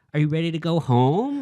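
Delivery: put-on condescending high voice as to a child. Retelling catching oneself talking to a kid: imitating talking to a kid. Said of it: "talking to a kid like".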